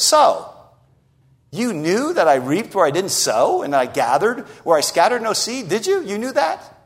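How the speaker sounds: cutting, mocking, biting sarcasm with swooping pitch. Showing how the master questions the lazy servant: biting sarcasm. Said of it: "It's a piece of biting sarcasm. It sounds something like this".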